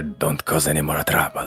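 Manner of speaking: hushed whisper, close to the ear. Holding Toothy by the arm and warning him, whispering into his ear. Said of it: "I'll sort of whisper into his ear".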